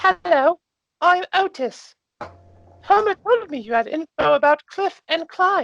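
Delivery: tiny halfling voice, pitched way up. Game master voices a halfling greeting the players: Otis halfling character voice. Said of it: "you see a very small halfling man approach you. Um, I'm just going to ex- kind of describe him a little bit. So he is exceptionally muscular for a halfling man. / you see a very small halfling man app".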